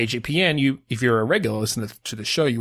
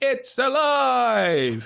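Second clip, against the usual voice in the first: hammed-up, very high cry, last word stretched out; 12 semitones higher than usual. Counting down and calling out to everybody: best "it's alive" voice. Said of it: "in your best voice".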